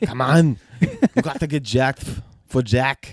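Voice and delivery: put-on bodybuilder-style Austrian accent, swooping. A soon-to-be dad jokes about his gym push, in an Austrian accent. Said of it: "you're gonna have an Austrian accent pretty soon".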